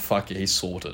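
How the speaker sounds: soft, slow, resigned inner-voice mutter. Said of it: "I'm like".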